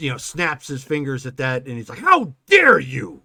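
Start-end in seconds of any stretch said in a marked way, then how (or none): 2.0-3.1 very loud, very high, enraged furious yell. A game master voicing a character the players cast a spell at, furious yelling. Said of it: "you were just yelling at us".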